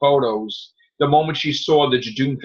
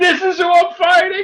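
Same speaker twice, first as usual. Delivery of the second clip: put-on, very high, hysterical laughing, cracking up; 4 dB louder than usual. Retelling Jodie Whittaker seeing the Jadoon: imitating Jodie Whittaker cracking up. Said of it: "She started hysterically cracking up".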